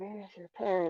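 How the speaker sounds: whispered under breath. A player describing how a character might react, whispering under breath. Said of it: "maybe whisper under breath".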